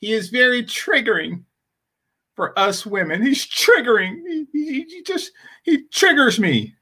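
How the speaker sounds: acted little cry through words, high, teary, complaining. Imitating a woman in a played clip: mock crying voice. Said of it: "She said it with a little cry".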